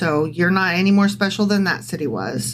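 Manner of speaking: ordinary talk, nothing marked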